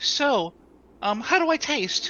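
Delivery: naive, innocent, very high, loud and slow. Voicing a character asking an embarrassing question: innocent-sounding voice, loud. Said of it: "in a relatively, uh, innocent sounding voice".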